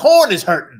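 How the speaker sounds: booming, very loud, belted cartoon rooster voice. Retelling a favorite cartoon gag to a co-host, in Foghorn Leghorn voice. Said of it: "talked like that".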